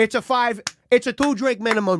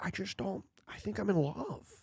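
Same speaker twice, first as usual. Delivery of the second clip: put-on laid-back drawl, quieter; 3 semitones lower, 15 dB quieter than usual. Trying out a new impression for the other speaker: Owen Wilson impression. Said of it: "that's not bad".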